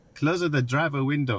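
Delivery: bad attempted put-on Spanish accent. Speaker testing the car's voice command for the driver window, attempted Spanish accent. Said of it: "I can't do a Spanish accent".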